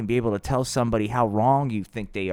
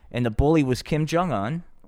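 ordinary talk

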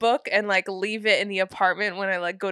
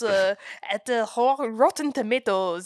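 bad put-on French accent, much higher; 2 semitones higher than usual. Talking about a film's reviews, the speaker names the review site in a bad French accent. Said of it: "I gave them a bad French accent".

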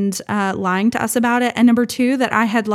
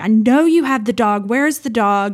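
acted-out yelling shout. Recounting a game with a man who hides the dog, retelling own yelling. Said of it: "I'm yelling at Cash because I'm like".

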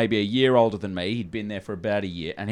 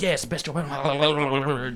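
put-on frantic talk, higher; 5 semitones higher than usual. Retelling a trainer on the phone at a call center: imitating a frantic trainer. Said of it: "He's, like, really frantic".

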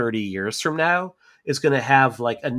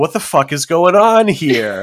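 loud, baffled, bewildered dad voice; 4 semitones higher, 8 dB louder than usual. Retelling how the movie's dad reacts to chaos: imitating a confused dad. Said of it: "show up as the dad and just be like".

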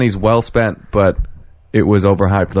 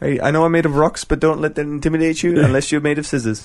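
put-on New Zealand accent, higher pitch; 7 semitones higher than usual. Describing a rock creature voiced by the director, doing Taika Waititi's rock creature voice. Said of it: "There's a New Zealand fucking rock creature".

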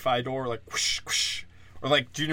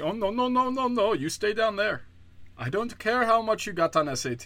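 put-on tentative Indian accent, pitched very high; 9 semitones higher than usual. Mimicking Indians in Silicon Valley turning someone away, in an attempted Indian accent. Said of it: "I don't know if that's an Indian accent".

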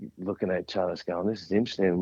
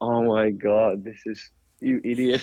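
acted talking while laughing, much slower; 2 semitones higher, 3 dB louder than usual. Retelling calling Lizzie after an embarrassing moment, retelling talking while laughing. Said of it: "we were just laughing, going".

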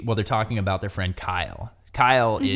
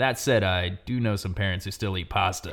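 mock deadpan, flat put-on delivery. Retelling a remark someone made right afterwards, imitating deadpan delivery. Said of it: "with a pretty deadpan delivery".

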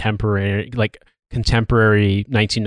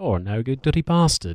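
put-on London voice, higher and quieter; 3 semitones higher, 4 dB quieter than usual. Doing a Michael Caine impression, as another speaker notes. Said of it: "David Baddiel as Michael Caine".

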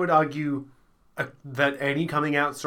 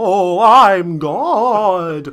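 very loud, spooky ghost voice; 4 semitones higher, 12 dB louder than usual. Speaker does their own impression of God, in a spooky God voice. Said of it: "I'll do my own impression of spooky God".

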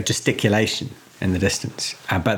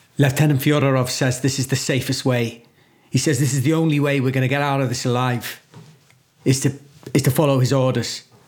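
character voice, loud; 4 semitones higher than usual. A game master voices Kovalevsky addressing the players, speaking loudly. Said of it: "hear him saying loudly".

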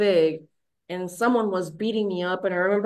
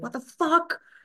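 mock furious outburst, high and shouted; 9 semitones higher than usual. Retelling shouting at the shaman after recovering: retelling an angry shout. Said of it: "I shouted at the shaman".

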